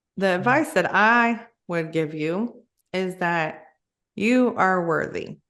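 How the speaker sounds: tearful, choking up, on the verge of crying. Giving advice to someone struggling to forgive themselves, close to tears. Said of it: "I might cry on this".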